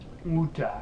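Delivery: woota said with a British accent. Joking about how the british say water: british accent on woota. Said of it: "as the British say".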